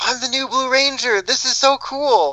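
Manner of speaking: put-on very high-pitched little kid voice. Speaker mimics the way Justin was talking: Justin's little kid voice. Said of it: "his little kid voice".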